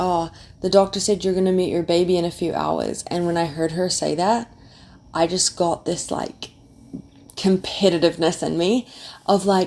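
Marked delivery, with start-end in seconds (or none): none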